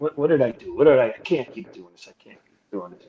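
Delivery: put-on speaking through tears, crying. Retelling what he said alone in the bathroom: retelling own tearful words. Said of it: "I got tears running down my face".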